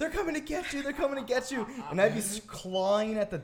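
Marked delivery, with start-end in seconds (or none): 0.0-1.7 put-on, high-pitched, repeated screaming. Tell how she would lock herself in the room while you clawed at the door, imitating someone screaming. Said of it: "scream like".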